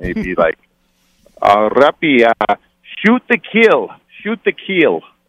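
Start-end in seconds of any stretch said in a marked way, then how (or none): 1.4-5.0 put-on French accent, pitched higher. Retelling what Lappy would always come up and say, imitating Lappy's French accent. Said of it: "he'd always come up to me with his French accent".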